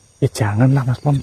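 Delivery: soft, low whisper. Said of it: "jangan ikut-ikutan bisik-bisik".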